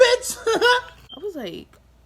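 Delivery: loud laughing exclamation.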